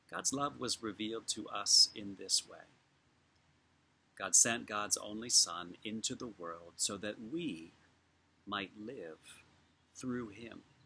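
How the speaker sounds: slow, unhurried reading with long pauses between lines. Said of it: "'cause I'm gonna read it slowly".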